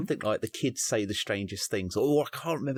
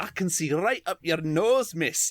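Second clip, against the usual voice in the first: bad put-on Scottish accent, higher; 8 semitones higher, 4 dB louder than usual. Retelling a child mocking a teacher on a call: bad Scottish accent. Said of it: "I did a bad accent".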